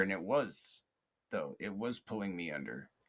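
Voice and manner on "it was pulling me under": ordinary talk, nothing marked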